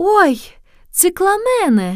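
very high, delighted, joyful cry. A lady on the stopped trolleybus exclaims joyfully. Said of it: "радостно воскликнула одна сеньора".

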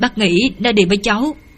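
ordinary delivery, nothing marked

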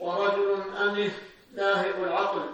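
normal talking voice

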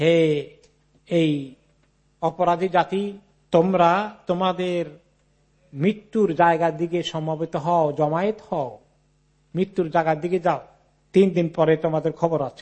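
normal talking voice

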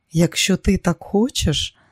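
tender, gentle, soft delivery. Answering his plan after a long look at him, she speaks tenderly. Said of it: "лагідно промовила вона".

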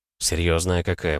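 plain

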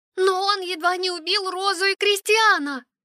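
very high, crying out, exclaiming. Answering a man's remark at the table, exclaiming. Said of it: "воскликнула Лиса".

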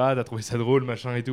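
ordinary talk

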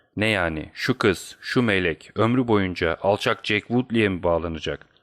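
ordinary delivery

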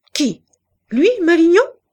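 shrill, very high, very loud offended outcry. Asked whether malignon is the man meant, she cries out, surprised and offended. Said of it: "cria-t-elle surprise et comme offensée".

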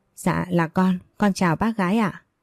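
ordinary delivery

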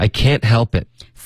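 can't stressed hard, dropping in pitch, forceful. Explaining English negation in I can't help it: stressed, falling, forceful can't. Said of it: "这个否认的这个can't 会加一点重音，往下降一点，会狠一点。".

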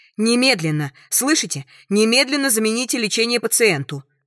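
shrill, screeching shriek. Narrator reading Nina's demand to the doctor; shrill screeching. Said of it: "верещит Нина".

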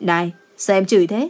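ordinary delivery, nothing marked

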